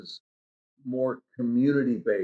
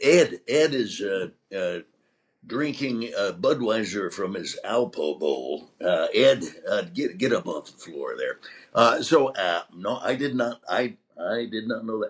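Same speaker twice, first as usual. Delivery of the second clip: low, halting delivery, lingering on each uh; 4 semitones lower than usual. Retelling an impression asked for on a show: Johnny Carson impression. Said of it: "I went into my, uh, Johnny Carson".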